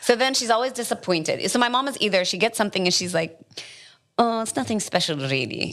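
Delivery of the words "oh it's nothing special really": put-on Palestinian accent. Imitating mom judging her restaurant food: strong Palestinian accent. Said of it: "an awesome, strong Palestinian accent".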